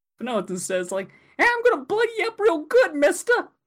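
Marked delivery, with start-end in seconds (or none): 1.4-3.3 put-on very high, old-timey newsboy patter. Describing the voice the thing turned out to have, old-timey newsie voice. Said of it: "it sounds like a newsie".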